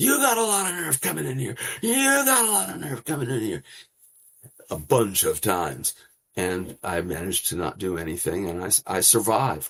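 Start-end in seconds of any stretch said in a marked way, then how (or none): 0.0-3.6 very high, shrill, in-your-face screaming. A reporter retells a man screaming inches from his face: imitating someone screaming. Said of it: "starts screaming".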